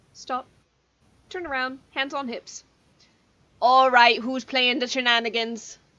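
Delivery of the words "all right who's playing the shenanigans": put-on loud grandmotherly voice. Playing a character who turns around, hands on hips: voice like a grandmother. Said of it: "You sound like my grandmother".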